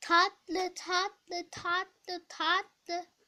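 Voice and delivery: flat, monotone, mechanical robot voice. Answering a friend, who then objects, in a robot voice. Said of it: "Robot gibi konuşma".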